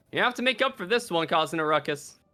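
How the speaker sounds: ordinary delivery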